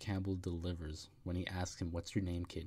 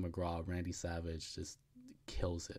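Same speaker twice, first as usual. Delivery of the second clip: normal talking voice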